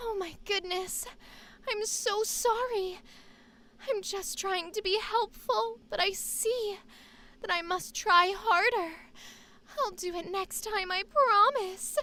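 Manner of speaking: put-on feminine voice. Speaker reenacting a line he was asked to read: higher-pitched feminine voice. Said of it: "the higher pitched like uh, feminine voice".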